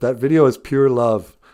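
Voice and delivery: ordinary talk, nothing marked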